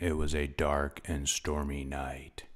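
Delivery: up-close, intimate narration. Walking around a microphone, demonstrating intimate up-close narration. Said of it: "continue talking into a really close, intimate, up close vocal narration".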